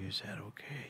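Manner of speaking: very quiet whisper, right in the ear. Retelling what the barber whispered in his ear: imitating a whisper. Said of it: "he whispered in my ear".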